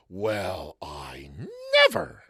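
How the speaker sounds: over-the-top, very loud, swooping, indignant outburst. Illustrating how an outraged person talks: outraged exclamation. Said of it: "Imagine someone outraged going".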